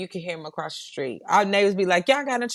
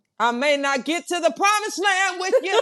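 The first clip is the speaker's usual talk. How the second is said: very high-pitched, authoritative, commanding voice; 10 semitones higher than usual. Talking about the voice that a daddy has, show what it is like in a Martin Luther King voice. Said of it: "My daddy had a voice like Martin Luther King".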